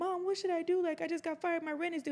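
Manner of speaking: put-on sobbing, very high and tearful. Retelling a phone call to mom after getting fired: retelling own crying. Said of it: "I remember calling her crying".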